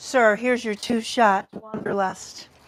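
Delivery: sexy, sultry, put-on phone-line voice. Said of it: "It's my one nine hundred voice going on here".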